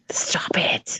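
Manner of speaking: urgent, soft, unvoiced whisper.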